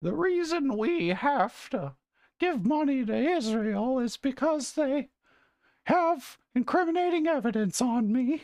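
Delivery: very high-pitched, slow frog-puppet voice. Showing an easy Jordan Peterson impression: Kermit the Frog voice. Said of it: "in your best Kermit the Frog voice".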